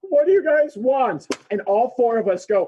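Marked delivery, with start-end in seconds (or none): 0.1-1.2 put-on scared voice, much higher, louder. Retelling how a man they chased answered at a red light, imitating a scared man. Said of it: "And he's like real scared".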